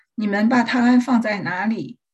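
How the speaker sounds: ordinary delivery, nothing marked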